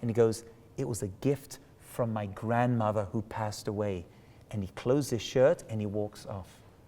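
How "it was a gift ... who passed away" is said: low, hushed, confiding stage half-whisper. Retelling how an employee came close to his face: imitating an employee half-whispering. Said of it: "He's whispering the whole time".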